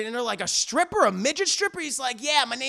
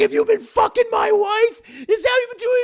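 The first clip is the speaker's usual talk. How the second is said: very loud, shrill, high-pitched screaming; 10 semitones higher, 8 dB louder than usual. Retelling a scene where a man holds a gun on someone: imitating someone yelling. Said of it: "he's just yelling at him".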